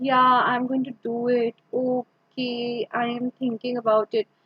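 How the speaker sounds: very down tone. Demonstrating how not to sound when answering, in a very down tone. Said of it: "or it should not be very down".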